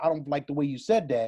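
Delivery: ordinary talk, nothing marked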